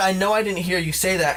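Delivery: ordinary delivery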